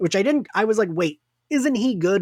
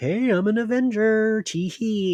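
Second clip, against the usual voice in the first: play-acted, very slow, laid-on-thick charm, pitched up; 6 semitones higher than usual. Retelling how Sam tried to lay on the charm: imitating Sam laying on charm. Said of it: "Sam was trying to lay on the charm. He's like".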